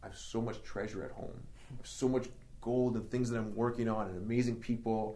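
ordinary talk, nothing marked

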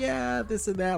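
play-acted, very high, all-happy cheerful voice. Retelling a woman interviewed in a phone line, imitating her all happy. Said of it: "like all happy that she's doing".

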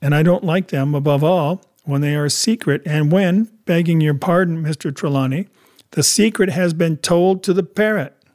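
plain

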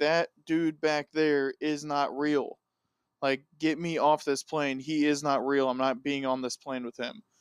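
ordinary delivery

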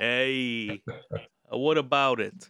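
put-on Brooklyn accent. Answering a teasing co-host with a put-on Brooklyn accent. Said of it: "he's been practicing his best Brooklyn".

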